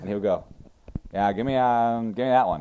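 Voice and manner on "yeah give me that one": put-on gum-chewing speech, louder and higher. Acting out a guy's reply when asked: imitating a gum-chewing guy. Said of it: "He chewed gum and he had the fake mustache".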